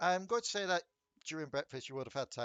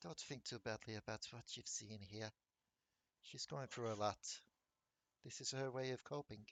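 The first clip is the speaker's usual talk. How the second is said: timid, very quiet, shy, soft-spoken, a bit rough; 4 semitones lower, 10 dB quieter than usual. Game master voicing an unseen, familiar voice speaking to a departing character, soft-spoken, shy, slightly rough. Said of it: "of soft spoken, a little bit shy, a little bit rough to the voice".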